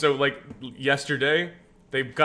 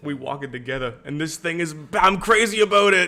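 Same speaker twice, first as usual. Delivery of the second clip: put-on slight New York accent, raised voice; 3 semitones higher, 5 dB louder than usual. Playing a character, slipping into a New Yorker accent. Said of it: "You almost slipped into an accent there".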